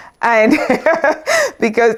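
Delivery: laughing through the words, pitch up high.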